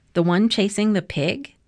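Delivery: plain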